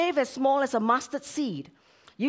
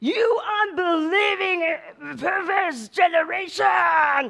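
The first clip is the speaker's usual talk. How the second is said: very angry, pitched-up rebuke; 5 semitones higher than usual. Showing how a quoted line sounds when read the wrong way: angry reading. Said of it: "it's a very angry Jesus".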